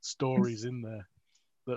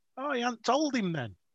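put-on thick Liverpool Scouse accent, pitched very high; 11 semitones higher than usual. Retelling what a man said about a driver, thick Scouse accent. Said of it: "really thick Scouse accent".

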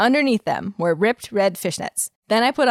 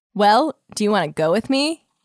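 ordinary talk, nothing marked

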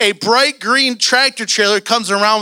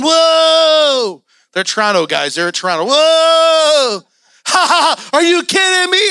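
put-on cracking up, high, drawn-out "ha," laughing disbelief; 6 semitones higher than usual. Retelling a phone call, acting out a man and his wife cracking up laughing. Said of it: "him and his wife start cracking up, laughing".

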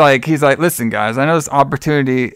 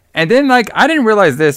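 ordinary talk

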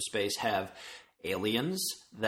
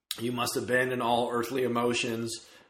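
ordinary talk, nothing marked

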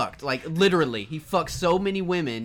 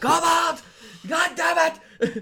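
very high, stretched-out, drawn-out freak-out; 10 semitones higher, 3 dB louder than usual. A character freaking out at a kobold during a fight, freaking out. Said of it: "And I freak out every time".

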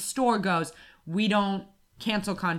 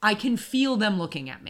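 ordinary talk, nothing marked

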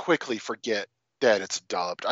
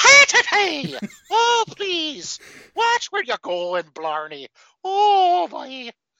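put-on over-the-top Irish accent, higher and louder; 6 dB louder than usual. Imitating an actor's performance in a film discussion: over-the-top Irish accent. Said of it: "doing a very over-the-top Irish accent".

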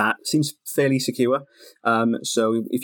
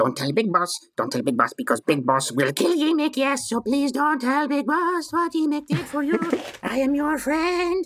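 high, swooping, squealing, panicky goblin voice. Game master voicing a goblin guide speaking to the players, panicky goblin Yimik. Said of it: "So the goblin picks itself up a little bit, but doesn't stand up and just sort of sits and looks around at you all panicky, and then snarls at you, Cass, just a little bit, and then thinks better of".

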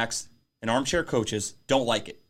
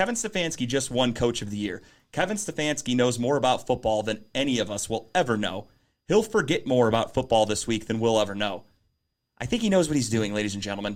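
normal talking voice

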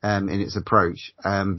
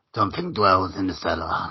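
small, devilish little monster creature voice; 3 dB quieter than usual. A host announces the movie from the vault in his little horny devil voice. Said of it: "That's my little horny devil thing voice".

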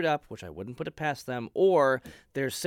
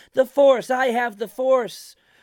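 put-on very high, very loud little-kid voice; 11 semitones higher, 10 dB louder than usual. Mocking how a Star Wars character says his line, childish five-year-old voice. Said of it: "he sounds like a five-year-old kid who doesn't understand".

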